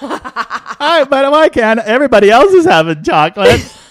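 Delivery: put-on drawn-out, very high, very loud old woman voice. Acting out an old person who wants chocolate: old Kathleen voice. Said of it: "I love how old Kathleen sounds".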